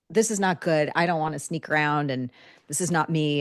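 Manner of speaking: ordinary talk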